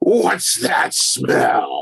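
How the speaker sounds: rough, creaky put-on voice, scraped out. Quoting a memorable movie line on request: Hulk Hogan voice. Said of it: "ask [name] to do it in his sweet Hogan voice".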